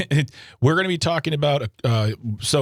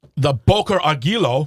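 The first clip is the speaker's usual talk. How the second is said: put-on German accent, said louder; 3 dB louder than usual. Retelling a news story, saying the company's name in a put-on German accent. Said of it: "that's not terrible German accent".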